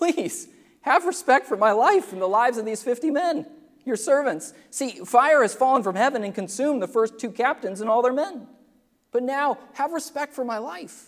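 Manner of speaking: high, pleading, begging tone.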